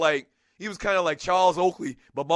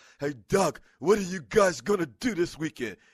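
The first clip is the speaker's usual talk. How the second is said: casual, relaxed manner of speaking. Telling a story about an uncle, imitating Uncle Donnie's voice. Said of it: "He talks like this".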